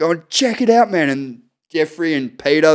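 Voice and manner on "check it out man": play-acted laughter, very high, laugh-filled voice. Retelling pointing at a screen while laughing uncontrollably. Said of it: "I'm just wetting myself laughing and pointing at it".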